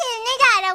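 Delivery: put-on excited little boy voice, squealed high and thrilled.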